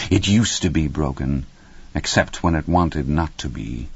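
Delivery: ordinary delivery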